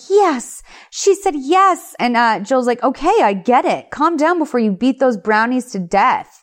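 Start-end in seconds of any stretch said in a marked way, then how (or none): 0.1-1.9 acted, very high, drawn-out excited scream. Recapping a scene, imitating a woman screaming excitedly. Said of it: "She's screaming like".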